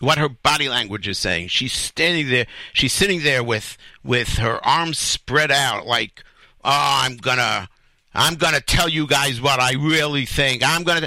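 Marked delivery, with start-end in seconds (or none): 6.7-11.1 defiant tone. Imitating a woman with her arms spread out: imitating a defiant tone. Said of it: "She's, like, defiant".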